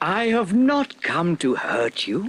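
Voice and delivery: gentle bear voice. Narrator reading a fairy tale, voicing the bear's words, in a gentle voice. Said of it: "said the bear in a gentle voice".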